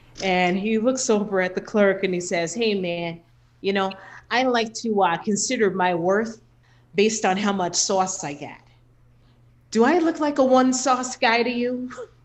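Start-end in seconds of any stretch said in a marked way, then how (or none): 2.5-11.9 heavy put-on Chicago accent. Comedian retelling a man talking to a drive-through clerk, in a hardcore chicago accent. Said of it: "he has a real hardcore Chicago accent".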